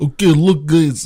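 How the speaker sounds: put-on loud, high Russian accent. Quoting what the governor of California said, Schwarzenegger impression, Russian accent. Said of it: "He did it in a Russian accent".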